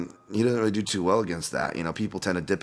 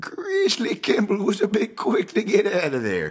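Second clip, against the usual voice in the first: high, slow, put-on old prospector voice. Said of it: "I use the prospector voice anytime I say Jeremy Grizzly Kimball".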